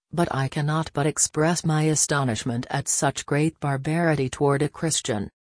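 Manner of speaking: plain reading voice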